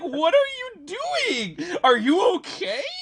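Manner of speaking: squeaky, very high, swooping, alarmed freak-out. Retelling how Andrew reacted to a long fart: squeaky voice imitating Andrew. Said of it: "Just this squeaky voice".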